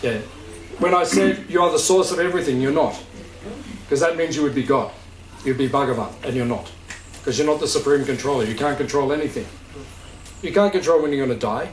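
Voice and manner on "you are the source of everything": quick, assertive delivery, pitch falling on "source". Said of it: "I'm clarifying for you".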